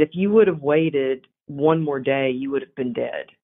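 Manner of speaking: ordinary delivery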